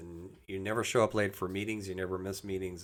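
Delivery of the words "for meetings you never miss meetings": normal talking voice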